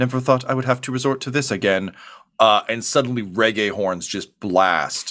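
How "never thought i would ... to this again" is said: fast, rattled-off mutter under the breath. A narrator voices a character muttering as he flies away: muttering. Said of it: "you just hear him mutter".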